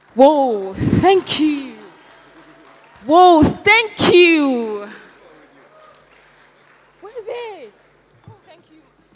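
overjoyed, thrilled, high, excitement unhidden, "you" drawn out. Just announced as the winner, thanking sister, friends and fans, so excited. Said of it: "I'm so excited right now".

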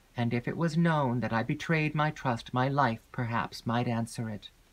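plain

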